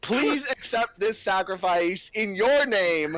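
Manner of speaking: piercing, shrill, very high-pitched scream. Flinging burning material at enemies as an offering to a goddess: screaming.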